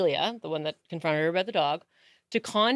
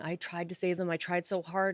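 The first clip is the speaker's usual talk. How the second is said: mock hysterical sobbing, words broken by sobs; 6 dB quieter than usual. Retelling words said outside a hotel: imitating someone sobbing. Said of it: "And she's sobbing".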